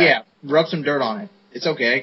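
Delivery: ordinary delivery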